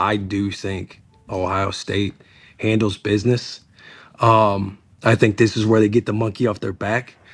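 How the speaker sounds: conspiratorial, confiding tone, as if sharing a secret. Sharing a prediction others shouldn't hear on a live show: saying it quietly. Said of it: "I think I'll say it quietly".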